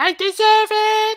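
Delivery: shrill, very loud, high, belted-out shout. Doing an impression of Megan Rapinoe for the others: Megan Rapinoe impression. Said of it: "do you want me to do an impression of her?".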